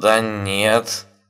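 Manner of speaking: uncertain, hesitant, unsure tone. A hacker answers a shocked man's question; uncertain objection. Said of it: "неуверенно возразил хакер".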